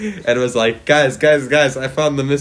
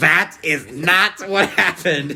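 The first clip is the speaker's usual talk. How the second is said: mock, very slow, cross, pitched-up angry tone; 5 semitones higher than usual. Voicing the angry-looking classmate's reaction: imitating someone angry. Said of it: "He looks so angry right now".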